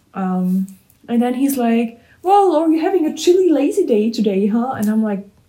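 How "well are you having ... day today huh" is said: high, loud, mocking, needling teasing voice. The speaker retells what he said to her on a bad day, imitating someone teasing. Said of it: "he's making fun of it".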